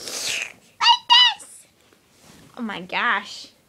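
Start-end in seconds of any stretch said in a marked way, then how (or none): 0.0-1.5 very high, loud, squeaky helium-balloon voice. Opening a tank of helium, then showing it off: squeaky helium voice. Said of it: "make my voice so squeaky".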